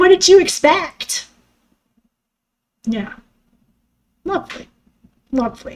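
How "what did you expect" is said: high, disapproving, judgmental tone. Retelling what a stepmother said from the back of the car: imitating a judgmental remark. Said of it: "with her judgmental self saying".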